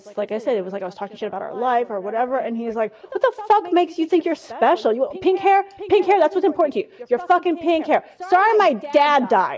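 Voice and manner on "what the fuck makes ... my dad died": loud, pitched-up yelling. Retelling how the speaker's dad yelled at them, retelling dad's yelling. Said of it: "He started yelling at me".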